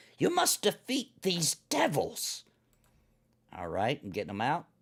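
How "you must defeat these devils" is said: very high, swooping, hissed disembodied hag voice. Narrating the game, voicing the hag speaking to the players, hissing disembodied hag voice. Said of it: "hisses the hag's disembodied voice".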